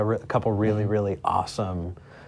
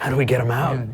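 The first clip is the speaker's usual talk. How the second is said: put-on dim model voice, higher and louder; 3 semitones higher, 5 dB louder than usual. Quoting a Zoolander line about files in the computer: Zoolander quote voice. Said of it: "I was thinking Zoolander".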